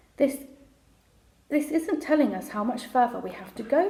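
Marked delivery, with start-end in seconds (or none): none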